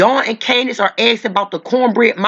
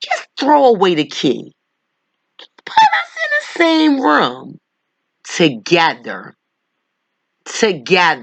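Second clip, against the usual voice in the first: acting unhinged, put-on psycho voice; 4 semitones lower than usual. Answering Doctor Phil's remark, the speaker imagines their own version in a put-on psycho voice. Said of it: "in a psycho voice".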